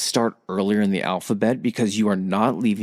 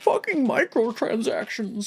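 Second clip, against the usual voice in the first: put-on shrill, very high, angry cranky old-man outburst; 14 semitones higher than usual. A speaker ranting about gaming repeats the gripe, mock angry old man. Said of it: "I sound like an angry old man".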